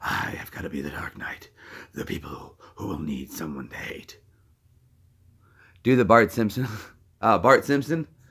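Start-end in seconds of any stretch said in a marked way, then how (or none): 0.0-4.2 very quiet, breathy, barely audible whisper. Asked to do voices, the speaker performs a Batman voice. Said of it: "the kind of Batman voice you want".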